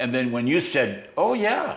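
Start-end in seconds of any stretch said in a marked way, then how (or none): 1.2-1.8 tiny, very high, little squeaky voice. Recalling how someone answered when asked if they knew God: little squeaky voice. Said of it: "kind of like that, kind of a little squeaky voice".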